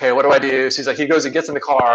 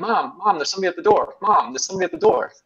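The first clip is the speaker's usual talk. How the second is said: put-on high, sing-song little kid voice calling out; 6 semitones higher, 3 dB quieter than usual. Retelling a pizza delivery story, imitating a little kid calling through the door. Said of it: "a little kid being like".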